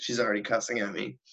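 ordinary delivery

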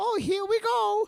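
shrill, loud, very high character voice, stretched out. Retelling how a character jumps into the water: Mario voice. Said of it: "Like fucking Mario".

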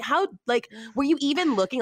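mock furious yell, pitched high. Retelling yelling at a lady who hit their car: retelling a yell. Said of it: "I'm just yelling at her".

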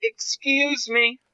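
softest, gentle, earnest, sincere, very polite voice. Retelling how a young man asked to get past: imitating a soft, sincere voice. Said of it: "in the softest, nicest, most fucking sincere voice".

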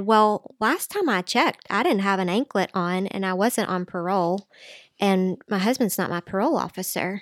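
plain

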